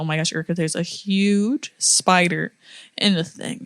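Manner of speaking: ordinary talk, nothing marked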